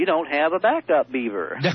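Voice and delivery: slow, lazy, drawling storyteller delivery. Retelling the punchline of Dennis's beaver story, with Dennis's drawl. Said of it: "Dennis drawls".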